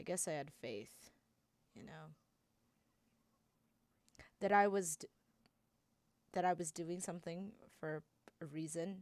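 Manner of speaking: shaky, trembling voice. A character reflecting on his own past choice: shaky voice. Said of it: "(Childe breathes in shakily.)".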